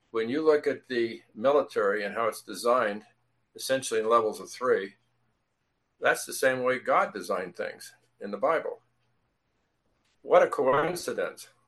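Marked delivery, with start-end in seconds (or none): 10.2-11.4 heavy sarcasm with fake wonder, pitched up. Commenting on military structure matching the Bible: sarcastic. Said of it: "I'm being sarcastic".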